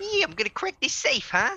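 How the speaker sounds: very high, old-school cartoon-crook Bronx accent. Describing the voices of the clown bank robbers, a speaker acts one out in an old-school Bronx accent. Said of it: "old school Bronx accents, like Fred Flintstone".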